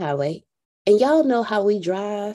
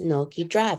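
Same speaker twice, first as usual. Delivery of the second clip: imitated, mock-soothing, calm, soothing voice; 4 semitones lower, 5 dB quieter than usual. Retelling dad telling his driving daughter to keep going, imitating a soothing, calming voice. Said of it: "In the most soothing, calming voice".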